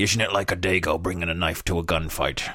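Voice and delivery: put-on Irish accent. Speaker imagines suddenly breaking into a quip mid-rant: Irish accent. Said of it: "I'll break into an Irish accent and say".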